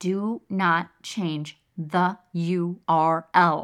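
very slow, deliberate, word-by-word delivery. Giving a word of caution about updating past content, said slowly. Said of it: "Can I say it slow enough for you?".

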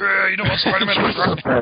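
put-on deep gravelly superhero voice.

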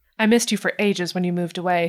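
normal talking voice

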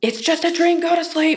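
mock angry, very high voice. Showing how a parent might answer a child woken by a nightmare: angry voice. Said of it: "you said it like in that angry voice".

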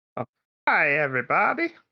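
pitch swooping up and down throughout. Redoing the greeting as the other speaker meant it: Doctor Nick voice. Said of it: "I was going more for Doctor Nick".

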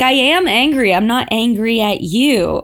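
ordinary talk

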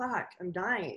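spoken while laughing through the words. Retelling what he showed, going: imitating someone laughing while talking. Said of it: "laughing, going".

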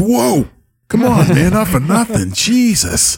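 put-on very high, slurred drunk voice. Recounting the game as Carl nearly loses the chest over the side, drunk Carl voice. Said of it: "drunkly like".

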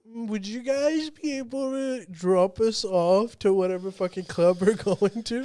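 put-on small, flirtatious voice. Retelling an annoying woman asking the group for a ride, imitating a little flirty voice. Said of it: "she goes like in a little flirty voice".

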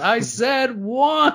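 very high, angry, fed-up squeal. Retelling a Simpsons scene where Barney gets mad: imitating angry Barney. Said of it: "Barney gets mad and he goes".

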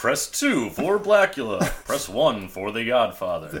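movie-trailer announcer voice, phone-menu style read. Listing movie titles as phone-menu options, in a Moviefone announcer voice. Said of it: "they sounded a little bit like the movie phone guy".

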